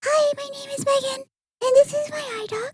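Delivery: very high, tiny first-grader voice. Giving her idog presentation, speaker imitates her high childhood voice. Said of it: "So just imagine as a kid".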